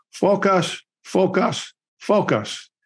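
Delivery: put-on Korean accent. Retelling what a man said at the end of a night: Korean accent impression. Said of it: "in this Korean accent".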